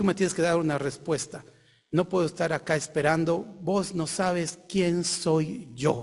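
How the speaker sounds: ordinary talk, nothing marked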